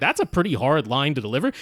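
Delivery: normal talking voice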